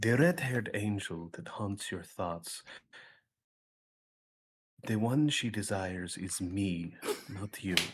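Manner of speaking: very low, hushed, leaned-in half-whisper. A player's character leans down to speak into another character's ear, half-whispering. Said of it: "I'm leaning down and I'm whispering in his ear".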